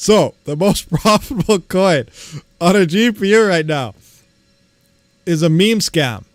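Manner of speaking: loud, laughing through words, barely holding back laughter. Reading out the top coin for GPU mining, laughing while talking. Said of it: "I can't even say it with a straight face".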